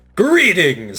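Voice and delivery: big, warm, booming, full-throated voice. Narrating a story, a glowing figure greets the listener across the lake: Kalor's warm, booming voice. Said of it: "says the figure in a warm, booming voice".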